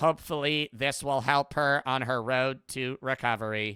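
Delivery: synthetic, robotic, AI-like computer voice. Quoting a doctor after removing a mass from a patient, sounding like an AI. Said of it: "he sounds like an A I".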